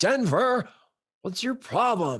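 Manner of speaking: laid-back surfer dude voice. Voice actor demonstrating a character from Denver the Last Dinosaur: surfer dude cartoon voice. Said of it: "who is a surfer dude, who's just like this".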